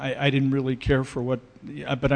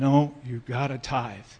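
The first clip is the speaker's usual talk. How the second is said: put-on divine, god-like voice. Describing the voices heard at the bottom of the stairs, God voice. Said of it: "and I got the God voice".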